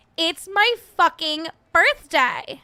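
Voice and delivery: put-on high, slow, loud, stretched-out whine. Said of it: "That's a spot on Stassi impression".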